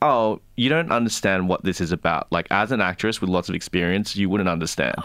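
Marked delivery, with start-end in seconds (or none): none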